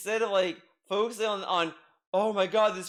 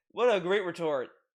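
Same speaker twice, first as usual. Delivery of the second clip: ordinary talk, nothing marked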